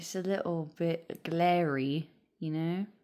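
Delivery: British accent briefly creeping into the speech. Explaining the overhead light is glary, slipping into a British accent. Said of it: "I just turned British there for a minute".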